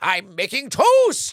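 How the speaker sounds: very loud, high, belted-out character voice. Quoting a line of a cartoon character: Professor Membrane voice. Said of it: "which is, uh, Professor Membrane".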